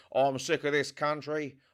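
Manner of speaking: exaggerated, really bad put-on Australian accent. Acting out a character in a really bad Australian accent. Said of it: "I'm doing a really shit Australian accent".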